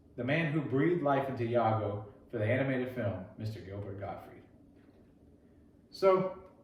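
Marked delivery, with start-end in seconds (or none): none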